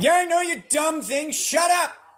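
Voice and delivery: loud, shrill, very high-pitched shouting. While cooking for viewers, yelling at the smoke detector. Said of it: "I had to yell at my uh".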